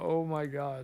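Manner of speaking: acted-out frightened, alarmed blurt. Recounting a scene where the gyro captain is strapped in, imitating him scared. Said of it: "He's so scared too".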